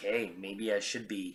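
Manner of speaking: ordinary talk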